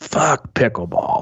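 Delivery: put-on rasping, raspy older man's voice. Retelling what an older tennis partner said: imitating an older man's raspy voice. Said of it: "real raspy voice".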